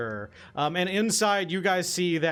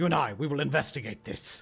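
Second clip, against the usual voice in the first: quietly ominous, menacing, threatening tone. Voicing a character who glares at the other: glaring, menacing. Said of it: "Kinda glares at you and says".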